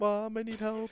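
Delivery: very high-pitched, tearful crying. Speaker retells walking in bleeding and calling to mom, imitating own crying. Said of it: "I'm crying".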